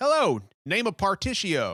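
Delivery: sing-song character voice with pitch swooping all over. Imitating a game character introducing himself: Partitio voice. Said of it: "he talks like this".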